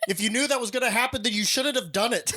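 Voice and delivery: very high, sharp, barked scolding tone. Retelling the dad's reply to the man who lost his plate: imitating a barked retort. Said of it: "my dad barked at him".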